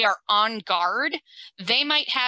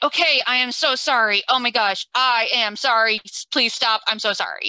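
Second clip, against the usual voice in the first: scared, begging, pleading, frightened dog voice; 3 dB louder than usual. Explaining dog ears lying fully flat, voicing the upset dog: voicing a frightened apologetic dog. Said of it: "something has really upset them".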